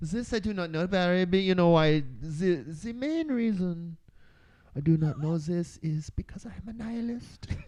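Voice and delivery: very high, fake German supervillain accent. A podcast host answers a cohost named Barry, in a mock German supervillain accent. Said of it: "trying to like channel German like supervillain".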